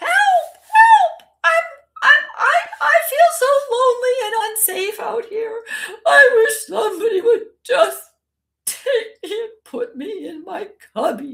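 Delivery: very high, very loud, silly shoe voice. Speaker demonstrates making shoes on the floor talk to a child, funny talking-shoe voice. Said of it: "Make the shoes talk in a funny voice".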